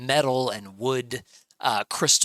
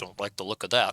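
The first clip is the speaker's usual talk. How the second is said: low, hushed mutter under the breath; 3 semitones lower, 3 dB quieter than usual. Narrating a desert caravan scene, the caravan leader muttering under his breath. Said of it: "you hear under his breath say".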